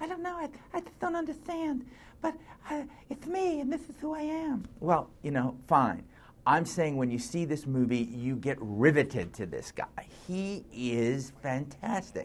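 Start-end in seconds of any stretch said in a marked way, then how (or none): 0.0-4.7 very high voice with a lisp on s sounds. Doing a Mike Tyson impersonation, high lisping Mike Tyson impression. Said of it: "try to get that highness in the voice and the lisp".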